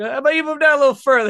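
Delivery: good-natured, through laughter. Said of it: "he was smiling and laughing".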